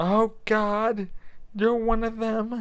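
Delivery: slow, high-pitched, fake southern drawl. Describing a movie scene to a listener, in Hans Gruber's fake southern accent. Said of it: "He changes his voice to a kind of southern guy".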